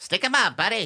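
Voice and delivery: put-on high-pitched, old-timey TV way of talking. Arguing with another speaker about whether people really talked this way: old-timey TV talk. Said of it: "what they used to talk like back in there".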